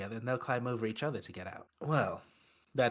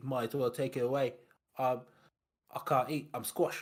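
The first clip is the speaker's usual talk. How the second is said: grumbling, complaining tone; 2 semitones higher than usual. Retelling what a squashed passenger said when food came: imitating a complaining passenger. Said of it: "exactly how he sounded as well".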